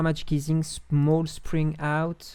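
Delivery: over-the-top put-on English accent, drawn out. Reading out software menu options in an exaggerated English accent. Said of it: "Avec le meilleur accent anglais possible".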